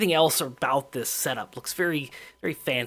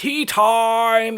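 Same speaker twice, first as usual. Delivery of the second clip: thundering, very loud, high, time-stretched booming holler; 8 semitones higher, 8 dB louder than usual. Narrating a game scene, a man slams his cane and calls out, hollering loudly. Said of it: "slams his cane on the ground and hollers".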